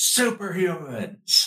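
high, swooping, hollered yell. Voicing a sergeant chasing the group who spots superhumans: yelling sergeant. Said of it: "the sergeant yells".

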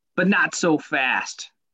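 very slow teasing, every word drawn out. Opening the episode, then naming the Lee Corso impression. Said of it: "That's my Lee Corso impression".

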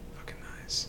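soft, whispered aside.

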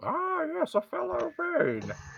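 very high pitched voice, muffled by speaking into cup. Talking with others, speaking into a cup to do a Bane voice. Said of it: "I can do his voice as long as I have a cup".

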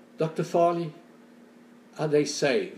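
sincere, cracking, broken voice. Recounting a father's question to the doctor, the speaker imitates a broken voice. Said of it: "with a broken voice".

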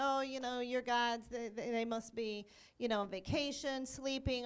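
ordinary delivery

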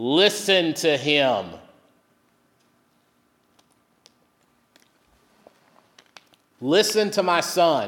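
very emphatic, forceful, every word pressed hard and firm. Retelling how god's words were spoken: acting very emphatic. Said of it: "it was very emphatic".

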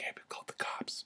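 very hushed, breathy whisper. Retelling a neighbor's warning about the cops: imitating a whisper. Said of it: "whispered in my ear".

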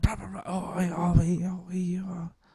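overly lively, hyperactive put-on Scouse accent. Showing how the Scouse accent sounds compared with Manchester: imitating a very active Scouse accent. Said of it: "the Scouse accent is very, very active".

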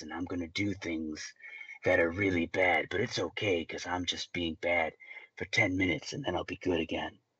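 deep, throaty, self-serious movie villain voice. Mocking serious movie villains who turn evil briefly: mock deep throaty villain voice. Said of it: "I've got a deep, throaty voice".

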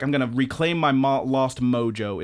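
ordinary talk

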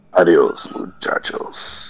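whispered, extra gravelly rough voice. Saying goodbye at the end of the episode: extra gravelly voice. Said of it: "that extra gravel sounded really good".

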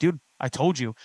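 usual speaking voice

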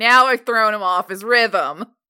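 very serious, grave, solemn, dead-serious voice. Imitating how Paul would deliver a line: very serious Jack Thomas voice. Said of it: "in his very serious, like, Jack Thomas voice".

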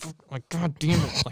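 muttering under the breath. Speaker retelling what they muttered while someone sat in the other room, muttering under the breath. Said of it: "muttering under my breath like".

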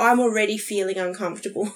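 normal talking voice

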